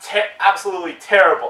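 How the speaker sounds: ordinary talk, nothing marked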